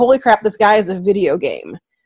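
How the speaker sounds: ordinary talk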